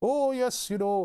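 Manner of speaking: put-on northern English accent, pitched high. Joking about a British lady detective: put-on northern English accent. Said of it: "the northern accent".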